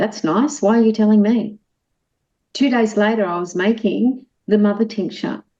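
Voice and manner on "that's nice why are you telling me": sarcastic, ironic, unmoved, unimpressed tone. Retelling own reply to a plant that spoke: imitating own sarcastic reply. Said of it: "in my human sarcasm".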